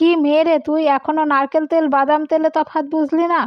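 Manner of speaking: taunting, mocking, echoed scolding voice. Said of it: "খুকুর সংলাপ হুবহু নকল করে বলল".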